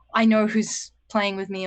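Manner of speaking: ordinary delivery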